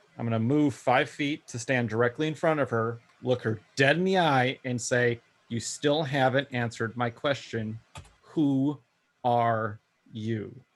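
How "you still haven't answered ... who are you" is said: slow, furious, thoroughly pissed-off delivery. Confronting someone face to face in character: slow and furious. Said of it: "I'm saying it's slow, and I am pissed".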